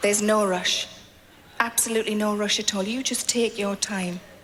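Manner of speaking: very low, smooth, velvety, soothing chocolatey voice. Imitating what she said to him at the end of a massage: velvety, chocolatey voice. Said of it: "they always put on their kind of velvety, chocolatey voice".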